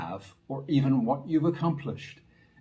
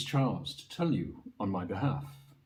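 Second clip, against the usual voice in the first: ordinary talk, nothing marked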